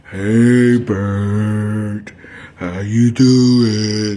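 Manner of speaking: gloomy, glum, very slow and drawn out. Acting out gloomy people, like a Sesame Street creature: gloomy Sesame Street creature voice. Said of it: "All down and all gloomy".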